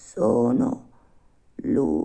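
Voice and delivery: stammered words. A dying donkey answers a puppet asking who he is; stammering, dying. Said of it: "rispose balbettando nel medesimo dialetto".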